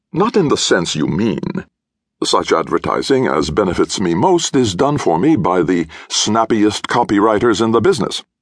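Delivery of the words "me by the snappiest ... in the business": ordinary delivery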